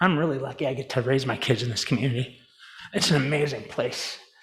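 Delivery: soft, emotional, choked-up voice, catching. A salesman giving a two-minute speech, getting emotional. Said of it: "I'm not sure why I'm getting emotional".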